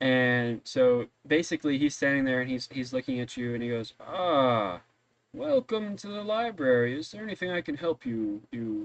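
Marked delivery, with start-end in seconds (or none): 4.0-8.9 put-on slow, high old-gentleman voice, stretching the "Ah". The storyteller voices a librarian welcoming visitors, older gentleman Geppetto voice. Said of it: "slightly older gentleman".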